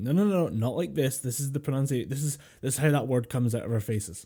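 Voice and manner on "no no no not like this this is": usual speaking voice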